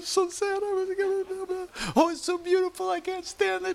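very high, mock-tearful weepy gushing.

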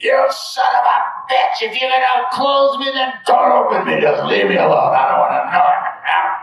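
top-of-the-lungs furious raging scream, very high, shrill. Retelling raging on a roof, screaming at Maharaji: imitating someone screaming in rage. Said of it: "screaming at the top of my lungs".

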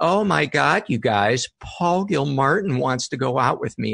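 sneering, sarcastic voice. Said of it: "in a really sarcastic voice".

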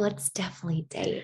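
put-on whisper. Retelling what he said on a date: imitating a whisper. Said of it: "He, like, whispers it too".

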